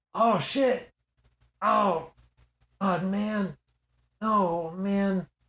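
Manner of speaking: soft, muttered swearing. Describing a sound heard off in the distance, quiet cursing to oneself. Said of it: "person like cursing to themselves who doesn't want to be loud".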